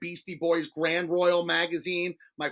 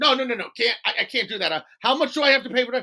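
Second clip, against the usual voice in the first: loud, frantic, panicky, panicked tone; 6 semitones higher, 5 dB louder than usual. Retelling a customer told the repair takes six days: imitating a frantic customer. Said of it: "why is everyone so frantic".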